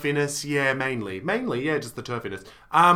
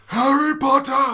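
very high, very loud villainous cry; 10 semitones higher, 7 dB louder than usual. Doing an impression that another speaker was expecting: Voldemort voice. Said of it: "my Voldemort is".

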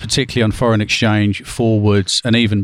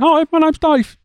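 tiny, very high, squeaky voice. Retelling meeting a colleague nicknamed Growler: imitating Dave's voice. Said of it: "you expect a man called Growler to have a certain type of voice".

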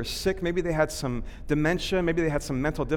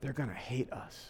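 murmured, lower and quieter; 4 semitones lower, 13 dB quieter than usual. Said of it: "she's saying under her breath".

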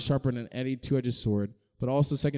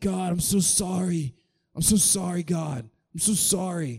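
very slow, drawn-out, pitched-up, over-apologetic tone; 5 semitones higher than usual. Retelling how an over-repentant person prays: imitating someone apologizing over and over. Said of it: "that one guy that's like".

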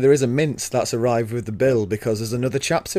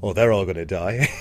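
lower put-on gloomy voice; 5 semitones lower than usual. Imitating the other speaker predicting that everyone will die: imitating Dave's voice. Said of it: "I just heard this voice of Dave going".

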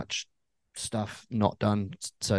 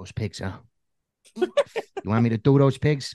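put-on New Jersey mobster accent; 3 semitones higher, 4 dB louder than usual. Riffing about the pigs on a pig farm, new jersey mobster voice. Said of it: "That's my New Jersey mobster voice".

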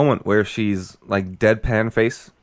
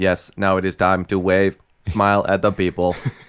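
robotic, flat, level monotone, like a machine; 3 semitones lower than usual. Imitating a politician being robotic: imitating robotic Stephen Harper. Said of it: "She's like Stephen Harper".

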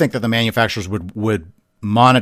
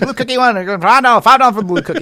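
mock auctioneer patter, much higher; 13 semitones higher, 3 dB louder than usual. Playfully taking bids for the others, in an auctioneer voice. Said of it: "You'd be a good auctioneer".

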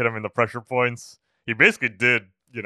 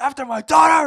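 put-on angry voice, higher and louder; 8 dB louder than usual. Retelling a fight scene, quoting Daniel: imitating Daniel's angry voice. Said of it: "I just love the anger in his voice".

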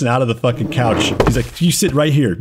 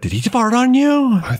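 put-on drunk girl voice, very high-pitched; 11 semitones higher than usual. Retelling what a drunk girl said in a dining area; imitating a drunk girl. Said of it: "The drunk girl goes like".

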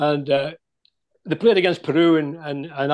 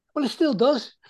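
put-on high-pitched Scouse accent in a kid voice. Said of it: "Scouse accent".

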